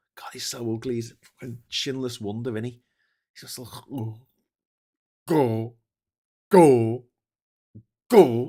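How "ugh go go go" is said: booming, slow, drawn-out bark. Mocking someone's looks, then doing an Andrew Tate impression. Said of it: "That's my Andrew Tate impression".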